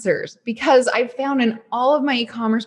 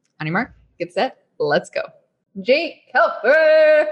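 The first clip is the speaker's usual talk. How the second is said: excited, playful announcer voice. Podcast host introducing a guest, announcer voice. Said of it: "my first like real announcement voice".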